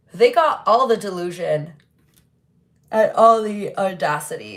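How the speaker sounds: speaking through a yawn. Commenting on what a person wrote, said while yawning. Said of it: "Sorry guys, yawning".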